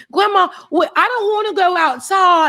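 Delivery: put-on child's English accent. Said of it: "and then you have this, this ac-".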